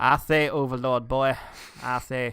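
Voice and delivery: bad, slow Southern gentleman drawl. Talking about a recent Titans Return episode, doing a bad Southern dandy impression. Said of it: "doing bad Southern Dandy impressions".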